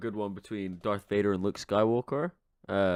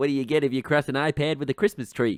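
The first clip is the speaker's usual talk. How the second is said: loud, pitched-up, laid-on put-on Bronx accent; 6 semitones higher, 5 dB louder than usual. Telling a Christmas joke when asked to: Bronx accent. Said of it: "Could you do these in a Bronx accent?".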